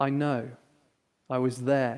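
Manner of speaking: very gentle, very quiet, soft, low voice. Retelling how a tutor finally answered students describing a miners' strike, retelling a gentle, quiet reply. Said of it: "in a very gentle and very quiet voice".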